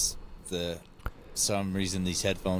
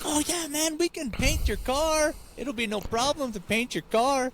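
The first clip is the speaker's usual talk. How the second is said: put-on Spanish accent, very high, slow, drawn-out. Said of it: "this guy walks in and it's like".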